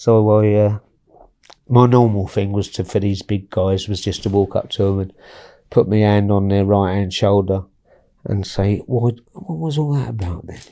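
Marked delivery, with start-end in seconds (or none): 8.8-10.6 nice calm, soft, easygoing, unbothered voice. Recounting how he approached big men, retelling his words in a calm voice. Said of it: "in a nice calm voice".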